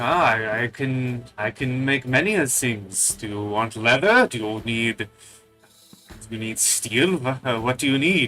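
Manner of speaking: put-on vague generic European accent. Voicing the shopkeeper offering to craft armor: put-on vague european accent. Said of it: "It's just turning basic European now".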